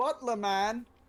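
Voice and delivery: very loud calling voice. Calling out to summon the butler, saying it really loud. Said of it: "I'm just gonna say that really loud".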